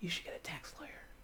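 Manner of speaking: soft, quiet, whispered inner voice. Speaker acting out the nudge that comes while kneading dough, quiet inner voice. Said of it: "It's like a quiet voice".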